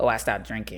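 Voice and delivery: ordinary talk, nothing marked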